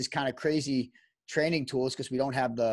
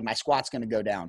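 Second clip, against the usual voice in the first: mock panicked voice, pitched lower; 4 semitones lower than usual. Retelling what a panicking young athlete said: imitating a panicking athlete. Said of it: "he's in mass panic".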